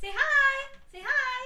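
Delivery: high pet-talk voice.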